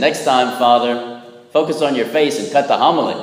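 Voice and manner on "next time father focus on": usual speaking voice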